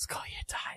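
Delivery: put-on whisper. Retelling what a boyfriend said in a museum: imitating a whisper. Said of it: "my boyfriend whispered to me".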